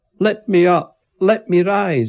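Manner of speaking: very loud, high, drawn-out bellowing shout. Reading a story, the narrator, pinned under a man's foot, shouting. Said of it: "I shouted".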